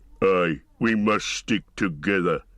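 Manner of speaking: rough growling orc voice. Narrator reading Uglúk's reply to another orc, growling as Uglúk. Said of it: "growled Ugluk".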